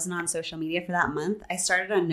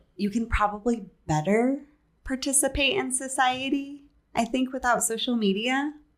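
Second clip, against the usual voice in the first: gentle, eased-out delivery, a bit higher pitch; 7 semitones higher than usual. Giving the easy version of an answer, in a soft voice. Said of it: "I say that with a soft voice so that it's easy".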